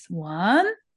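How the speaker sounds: "one" said with a rising lilt. Counting down to one: upward lilt on one. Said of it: "the lilt of your voice. One, right? That up we go".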